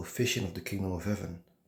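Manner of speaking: normal talking voice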